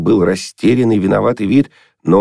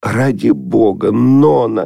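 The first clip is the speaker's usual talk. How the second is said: faltering, mumbled words with cracking voice; 2 semitones higher than usual. Arkady Sergeyevich speaks on the phone to Nonna Mikhailovna, faltering and mumbling. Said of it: "срывающимся голосом забормотал".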